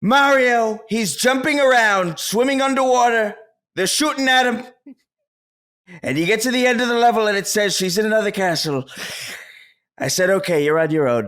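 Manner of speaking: rousing, rally speech style delivery. Reading a joke text aloud as asked: Donald Trump voice. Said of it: "read it in a Donald Trump voice".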